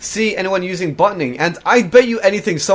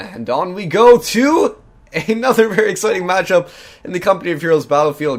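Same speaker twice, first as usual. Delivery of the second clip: voice breaking and cracking as pitch climbs. Speaker announcing a Company of Heroes matchup; voice cracking. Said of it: "I think my voice sort of cracked there".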